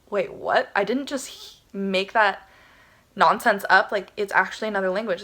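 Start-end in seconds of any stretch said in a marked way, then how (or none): none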